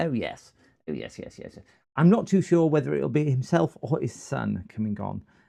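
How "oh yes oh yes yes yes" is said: put-on posh voice, breathy, almost whispered. As his mate comes online, the speaker does his put-on posh voice. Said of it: "I'm going to put my posh, my posh voice on".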